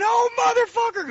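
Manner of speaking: mock, shrill, very high, pained scream. Retelling how a man bent over behind the back door, imitating Bubba screaming in pain. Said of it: "started screaming. He started crying".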